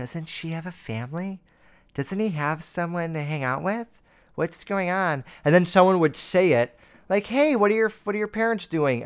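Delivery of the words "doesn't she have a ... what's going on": put-on whispering, much quieter. Acting out relatives gossiping about a guest kid, retelling whispered family gossip. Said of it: "the whole family would be like whispering".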